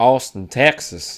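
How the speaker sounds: drawling Southern Texas accent. Asked to let the others hear the accent, saying the city name: showing off Texas accent. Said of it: "Let me hear your accent".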